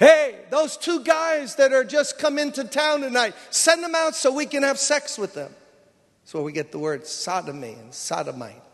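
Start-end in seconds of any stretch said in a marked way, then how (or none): 0.0-5.5 crowd yelling out. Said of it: "yelling out".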